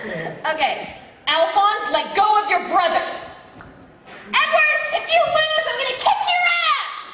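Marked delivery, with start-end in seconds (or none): 1.3-7.1 furious, very high, angry rising yell. Asked to redo the lines, the voice actor performs angry Winry. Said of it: "So that's angry Winry".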